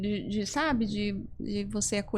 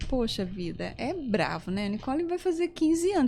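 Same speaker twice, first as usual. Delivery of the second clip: ordinary talk, nothing marked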